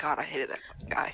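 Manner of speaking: barely audible whispered grumble under the breath. Acting out own character's remark after walking away: muttering barely under her breath. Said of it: "barely under her breath".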